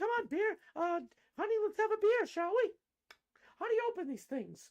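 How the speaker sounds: put-on voice pushed high, mocking. Mocking a politician trying to seem relatable with beer: imitating Elizabeth Warren. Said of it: "And she's like".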